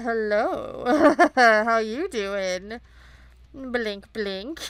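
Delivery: flirty, flirtatious bedroom-eyes voice. Voicing a drawn character giving bedroom eyes: flirty bedroom-eyes voice. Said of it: "Why is this orange giving him the bedroom eyes?".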